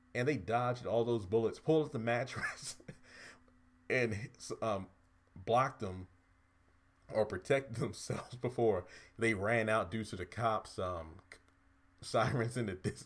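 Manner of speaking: talking while cracking up, laughing through words. Recounting a scene that makes no sense and laughing at it: laughing while talking. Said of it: "I'm sorry, I'm laughing".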